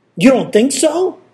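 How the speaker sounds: anger in the voice. Man answers Deer, who agreed with Buffalo about his strength, angrily. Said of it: "anger in his voice".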